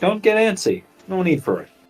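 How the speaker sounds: composed, calm, reassuring voice, a touch high. Player's character speaks to another character during a turn, in a calm voice. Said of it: "in a calm voice".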